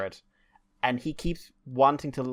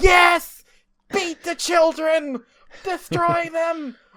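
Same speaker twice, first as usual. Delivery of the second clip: dramatic, slow, shrill, very high, very loud roar; 10 dB louder than usual. Retelling a game flashback with excited children: imitating Kiryu Kazuma roaring.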